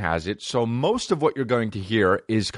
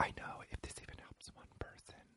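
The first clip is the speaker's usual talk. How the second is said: mock-whispering, much quieter. Retelling what a woman said about well-being, imitating a whisper. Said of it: "she's doing the whisper thing the whole time".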